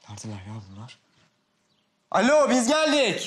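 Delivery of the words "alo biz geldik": very high, loud shouted call-out. Back from school, calling out to family who aren't home, shouting into an empty house. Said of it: "Boşuna bağırma".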